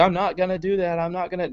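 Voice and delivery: put-on soft, soft-spoken old grandpa voice. Retelling a convention exchange, the speaker voices Bill Weld replying: Bill Weld old grandpa voice. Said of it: "like this old, grandpa voice".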